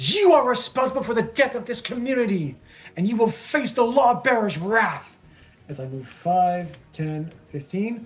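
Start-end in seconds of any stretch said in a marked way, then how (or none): 0.0-5.2 furious, angry yelling. Voicing a character who yells at a spectral spirit on a throne: furious yelling. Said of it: "she is furious as she looks up at this spectral spirit at the throne and just yells at".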